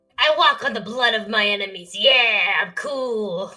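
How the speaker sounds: deliberately bad, loud voicing, cool and stretched out. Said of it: "a terrible impression of [name]".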